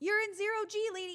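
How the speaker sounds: acted angry tone. Retelling own reaction to a movie character's mistake: retelling own angry rant. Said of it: "I was so mad".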